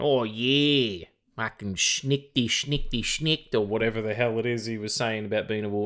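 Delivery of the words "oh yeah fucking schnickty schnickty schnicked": fake clumsy Australian accent, drawn-out "yeah". Recalling the Wolverine of an old cartoon, bad Australian-accent Wolverine voice. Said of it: "someone trying to do an approximation of an Australian accent, like when I do one".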